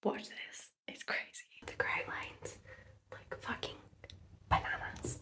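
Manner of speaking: breathy, hushed whisper. Showing off fresh grout lines while a roommate is still asleep, speaking quietly. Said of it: "I'm speaking quietly because our roommate is still asleep".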